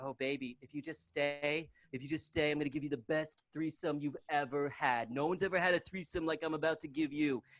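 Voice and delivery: put-on soft, wheedling, pleading voice. Acting out the trashy girlfriend begging her partner to stay: imitating a trashy girlfriend pleading. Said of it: "she's like".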